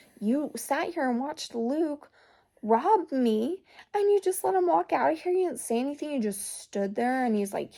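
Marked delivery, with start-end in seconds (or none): 0.2-6.1 mock full-on, high-pitched, berating yell. Retelling a scene where a character yells at his sister: retelling a character yelling. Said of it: "But he's yelling at her".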